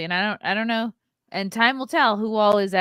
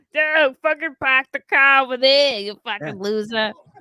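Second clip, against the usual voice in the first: exaggerated, goofy Boston accent, pitched up; 5 semitones higher, 4 dB louder than usual. Mocking how some people sound: goofy Boston accent. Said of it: "put on my goofiest Boston accent".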